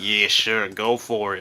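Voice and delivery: low voice, pitch dropped. Acting out asking the boss for permission, imitating the boss's voice. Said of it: "How did you nail my boss's voice exactly?".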